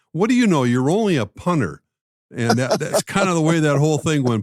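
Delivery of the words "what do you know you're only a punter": high, squeaky, taunting voice. Recalling teammates picking on the punter, the speaker quotes Darren: squeaky Darren impression. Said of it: "in that squeaky voice of his".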